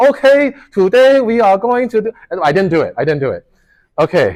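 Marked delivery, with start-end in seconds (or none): 0.0-2.1 heavy laid-on Chinese accent, very high. A TA imagines pranking new students on the first day, really thick Chinese accent. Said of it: "Should I come out with a really thick Chinese accent".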